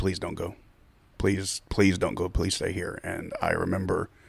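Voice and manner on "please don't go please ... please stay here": mock pleading, begging tone. Recalling getting dressed to leave, the speaker is retelling someone's begging. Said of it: "she starts begging".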